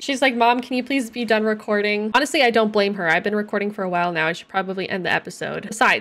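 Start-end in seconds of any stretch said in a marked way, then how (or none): none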